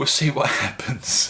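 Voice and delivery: self-amused laughing while speaking. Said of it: "Why am I shouting at you?".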